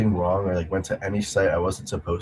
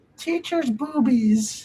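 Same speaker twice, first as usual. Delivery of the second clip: put-on very high, small child's voice. Recounting his brother's voice-typed audio recording, speaker quotes it in a little kid voice. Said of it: "the little kid voice".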